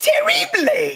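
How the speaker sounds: very high, squeaky little goblin villain voice. Asked to deliver the line terribly, answering in a little goblin dude voice. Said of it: "you are so little goblin dude right now".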